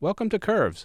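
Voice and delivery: high, smiling, welcoming tone.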